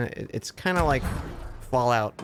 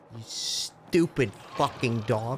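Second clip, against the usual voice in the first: angry outburst. Playing a game when the controls fail: angry outburst. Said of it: "I got a little angry".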